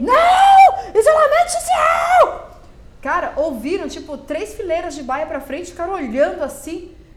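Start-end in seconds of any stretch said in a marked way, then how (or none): 0.0-2.5 very high, very loud shriek, Não drawn out. Recounting yelling at someone who came over to kiss hello, retelling a yell. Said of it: "Eu berrei".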